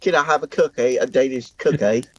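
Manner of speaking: terrible put-on British accent. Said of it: "Our accents are just terrible".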